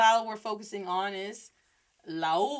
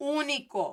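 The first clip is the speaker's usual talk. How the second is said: heavy stress on the first syllable Ú of único; 5 semitones higher than usual. Explaining Spanish pronunciation to learners, showing the accent mark: stressing Único. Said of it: "I just stress it more, emphasize it more".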